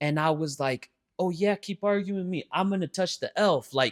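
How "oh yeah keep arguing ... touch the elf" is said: acted-out daring, threatening tone, high-pitched. Retelling a threat made while arguing: imitating a threat. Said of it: "threatening her".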